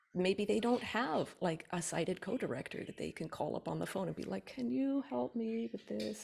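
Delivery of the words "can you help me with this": play-acted mopey, sorrowful, pleading voice. Imagining a screen-reader user phoning a sighted co-director, in a mock-sad voice. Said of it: "in a sad voice".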